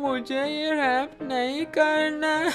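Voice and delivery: slow, fearful, timid speech.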